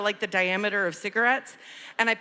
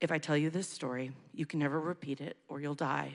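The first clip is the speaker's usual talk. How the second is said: put-on ominous, spooky tone, lower and quieter; 6 semitones lower, 9 dB quieter than usual. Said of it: "I look at all of them and I go".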